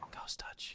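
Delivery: barely audible, very quiet, breathy whisper. Whispering a command word into a lance before charging: whispering. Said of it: "and I whisper into my lance".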